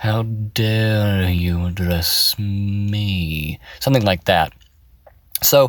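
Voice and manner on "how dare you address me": very slow, haughty, condescending tone, "me" stretched out. Demonstrating the judgment a character voice creates, condescending, judging-down voice. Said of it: "downward judgment that you're creating in the voice".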